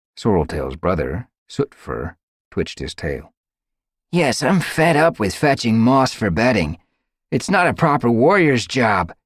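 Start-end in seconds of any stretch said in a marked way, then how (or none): 4.2-9.1 fed-up, raised, high-pitched grumbling. Sootfur, Sorreltail's brother, answers about apprentice duties, complaining. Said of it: "he complained".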